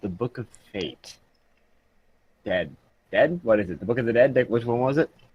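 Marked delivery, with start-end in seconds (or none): 0.0-1.2 very quiet, low, very soft, hushed tones. Retelling asking someone about a book, saying its title in hushed tones. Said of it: "And I say in hushed tones".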